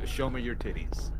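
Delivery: normal talking voice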